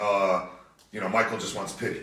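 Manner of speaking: ordinary talk, nothing marked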